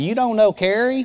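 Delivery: put-on accent from North Carolina. Retelling someone at a round table asking a question: Rusty's North Carolina accent. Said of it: "Rusty says in his North Carolina accent".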